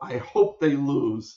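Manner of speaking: acted-out cross, heated, pointed tone. Retelling what the other speaker said as a teenager: imitating someone angry. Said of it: "You were so angry".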